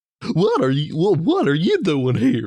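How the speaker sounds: very high, shrill, swooping clownish put-on voice. After listening to Wizzy talk so you can mimic the voice, show your Wizzy voice. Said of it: "This is my Wizzy voice".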